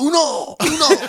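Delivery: wild put-on French accent. Retelling a fellow train passenger during a long ride, crazy French accent. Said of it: "Like in that French crazy accent".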